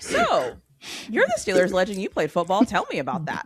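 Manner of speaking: naive, clueless interviewer voice with sing-song swoops. Showing how she hosts guests she knows nothing about: imitating own clueless interviewer manner. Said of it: "Mine tend to be a little bit more like".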